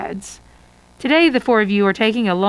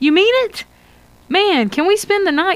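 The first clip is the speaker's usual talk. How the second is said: exclaiming, pitched very high; 10 semitones higher than usual. [name], hearing Peter planned a surprise camping trip, exclaiming. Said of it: "[name] exclaims".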